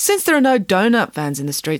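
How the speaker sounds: plain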